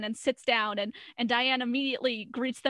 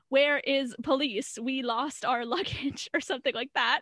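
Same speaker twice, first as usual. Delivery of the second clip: put-on thick, heavy, strong German accent. Retelling a man's closing line in a show, strong German accent. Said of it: "in a strong German accent".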